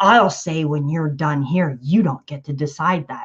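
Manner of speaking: imitated haughty, high and mighty tone. Retelling the reply to being told the talk was over: imitating a high and mighty tone. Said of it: "she gets all high and mighty".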